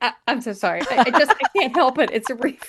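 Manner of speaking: high, loud, stumbling, flustered delivery. Retelling how her mom apologized after giving advice: imitating her mom's flustered apology. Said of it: "She's like".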